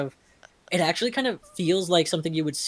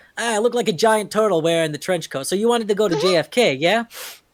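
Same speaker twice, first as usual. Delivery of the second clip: put-on New York accent, higher and louder; 3 semitones higher, 7 dB louder than usual. Imitating how New Yorkers talk: New Yorker accent. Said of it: "I've known many a New Yorker".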